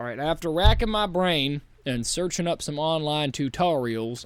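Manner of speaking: put-on American southern accent. Narrating after searching online tutorials, the speaker slips into a fake southern accent. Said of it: "I don't know why I'm doing a southern accent".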